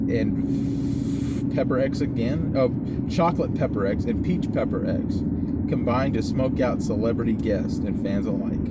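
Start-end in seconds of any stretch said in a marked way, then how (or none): none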